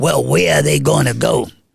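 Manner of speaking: gruff, low, rough-edged argumentative tone. Retelling an argument during the campaign: Bill Lynch's gruff voice. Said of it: "he had that gruff voice".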